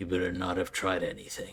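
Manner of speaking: slightly rough, rasping, somewhat raspy voice. Voicing a figure wrapped in clothing who warns a player: somewhat raspy voice. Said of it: "with a somewhat raspy voice and says".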